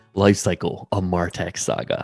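low, deep delivery. Asked to voice a series title, saying it in a deep voice. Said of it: "We should get [name] with his deep voice to do it".

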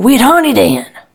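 high, loud exasperated yell. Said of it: "and I yell".

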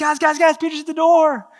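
acted, bursting excitement, high-pitched. Retelling a servant girl running back to the praying group: imitating someone excited. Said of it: "she's so excited".

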